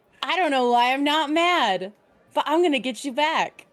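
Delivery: creepy, menacing, intimidating, threatening tone. Playing a character kneeling by another, hand on his shoulder: intimidating. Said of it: "in an intimidating way".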